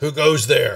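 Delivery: gruff yell. Narrating to the crew, voicing someone who yells out a challenge: gruff voice. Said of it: "basically a gruff voice".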